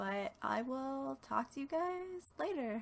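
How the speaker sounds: voice climbing high, rising at end. Speaker signing off to the audience, voice going high. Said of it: "I don't know why my voice went so high".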